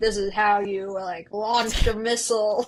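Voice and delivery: put-on Texan accent. Describing a class on the law of war to a friend, mock Texan accent. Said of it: "What accent is that? Is that your Texan".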